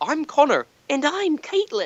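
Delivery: clumsy fake Irish accent, high and sing-song. Joking that both speakers are irish, attempting a failed irish accent. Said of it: "That was not Irish at all".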